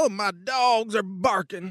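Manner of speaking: put-on slow, stretched-out Texas drawl. Explaining the accents they taught you, demonstrating a Texas drawl. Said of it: "run around with a Texas drawl".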